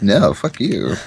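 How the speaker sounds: put-on voice with a stubborn tone. Imitating a friend who would refuse to help. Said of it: "that was my Nate voice".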